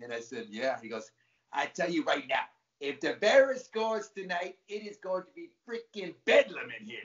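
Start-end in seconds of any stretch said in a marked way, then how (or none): 1.5-7.0 put-on New York accent, pitched up. Retelling what a huge man at the next urinal said: New York accent. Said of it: "in his New York accent".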